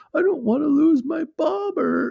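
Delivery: very high, loud, tearful sobbing and blubbering. Retelling a fishing trip, speaker voices the crying companion's words, imitating someone crying. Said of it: "just like crying".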